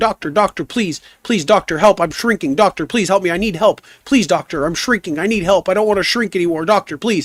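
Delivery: frantic, panicked, frightened pleading. Telling a dad joke, a man begs the doctor, mock-panicked pleading. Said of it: "he runs in there all panicked and frightened".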